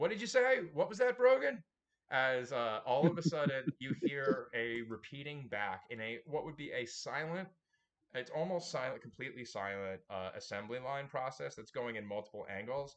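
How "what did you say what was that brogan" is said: shrill, very loud shout climbing higher in pitch. The game narrator acts out one player character calling to another, yelling. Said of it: "and you're yelling".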